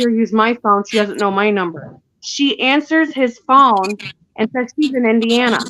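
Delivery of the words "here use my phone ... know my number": usual speaking voice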